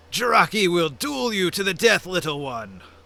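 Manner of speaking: furious, wrathful, enraged and menacing delivery. Narrator voicing Jiraki standing up to answer a threat, enraged Jiraki voice. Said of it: "enraged. He says".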